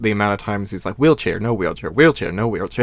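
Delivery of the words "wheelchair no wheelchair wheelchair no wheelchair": normal talking voice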